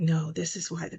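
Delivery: mock sincere, convincing voice. Acting out others urging you to pick the red, mock-truthful convincing voice. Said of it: "they put on that voice where you know they telling the truth".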